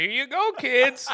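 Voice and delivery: put-on high, elderly grandpa voice. Mocking the other speaker's offer as a grandpa at Halloween: old grandpa voice. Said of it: "You sound like a grandpa handing out toothbrushes".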